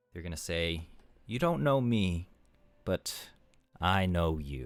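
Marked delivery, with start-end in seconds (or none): 1.3-4.7 woman's voice. Voicing an unseen speaker addressing the group: female voice. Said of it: "It is a female voice".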